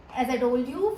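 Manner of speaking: ordinary talk, nothing marked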